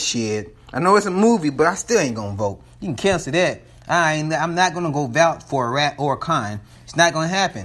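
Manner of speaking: plain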